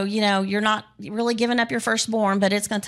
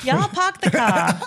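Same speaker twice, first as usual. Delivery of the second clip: put-on slight Massachusetts accent; 2 semitones higher than usual. Asked to say it one more time, in a Massachusetts accent. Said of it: "Little text Massachusetts right there".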